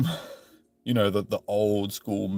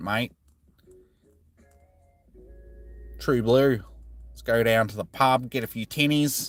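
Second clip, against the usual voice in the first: thick, put-on Australian accent laid on heavily; 2 semitones higher than usual. Answering a viewer's request by showing a thick Aussie accent. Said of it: "thick Aussie accent".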